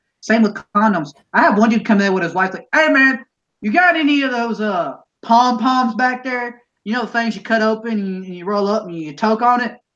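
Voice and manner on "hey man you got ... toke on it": put-on shameless, brazen, casual offhand tone. Retelling a store customer's loud request in front of everybody: imitating a customer yelling. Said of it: "fucking yelling in front of the entire store".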